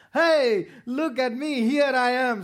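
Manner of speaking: drawn-out calling shout, very loud, slow and high. Acting out how he shouts to let people know, shouted loudly. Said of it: "He shouts like this".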